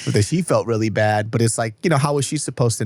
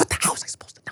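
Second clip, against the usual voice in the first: soft, unvoiced whisper-yelling. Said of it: "she's like whisper yelling at me".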